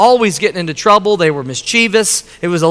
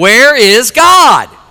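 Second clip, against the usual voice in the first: mock harder, sterner, raised delivery; 2 semitones higher, 5 dB louder than usual. Retelling a preacher asking a silent little boy again, retelling a sterner voice. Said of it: "in a more sterner voice".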